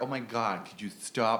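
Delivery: put-on valley girl accent. Talking about how american accents get imitated, the speaker shows a valley girl voice. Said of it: "it's Valley Girl".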